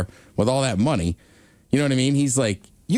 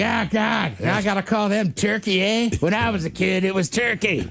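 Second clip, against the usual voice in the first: higher-pitched put-on old man voice; 8 semitones higher than usual. Retelling own reaction to a new team name: imitating an old guy. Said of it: "it was just an old guy moment".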